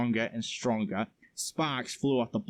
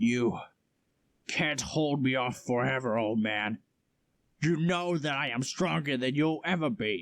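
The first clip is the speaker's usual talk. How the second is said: arrogant, menacing, furious jeering through clenched teeth; 2 semitones higher than usual. Reading a story, a warrior who just spat blood taunts an old man: angry, teeth clenched. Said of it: "his eyes now glistening with a solid crimson and a fiery aura surrounding him. / [name] regained his footing and spat blood on the ground. / "It is unfortunate you had to tell me the prophecy, because".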